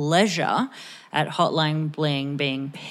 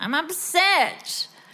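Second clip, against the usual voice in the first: put-on very high-pitched three-year-old toddler voice; 13 semitones higher than usual. Imitating a three-year-old named Toby saying the line: imitating a three-year-old. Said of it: "three-year-olds would say that".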